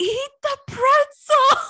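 very high, very loud, shrill scream. Telling a story about a long, tiring day, imitating uncle screaming at Billy. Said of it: "my uncle just screamed at him like".

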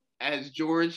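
ordinary delivery

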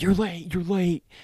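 put-on, shrill, scolding, screaming mother's voice. Retelling a late wake-up: imitating mom screaming. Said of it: "have my mom screaming at me".

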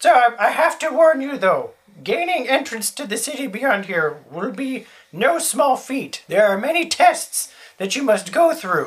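put-on high-pitched elderly old lady voice. Voicing the rescued hermit speaking to the party, old lady hermit voice. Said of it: "having rescued the Hermit [name], ... old lady".

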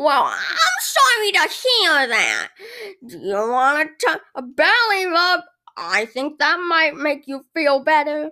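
sing-song counter worker character voice. Acting out ordering at Chick-fil-A, playing the employee: Todd voice. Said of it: "Here's how the ordering process goes at Chick-fil-A".

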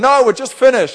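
high, loud calling voice.

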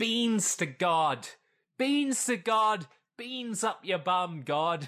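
slow, high, drawn-out holler. Retelling a film character yelling at God, imitating a yell. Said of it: "starts throwing beans at the clouds and yells".

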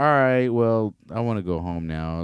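put-on nonchalant, unbothered voice. Retelling a player's reaction to winning a championship: imitating Nikola Jokic, nonchalant. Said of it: "he's nonchalant about everything".

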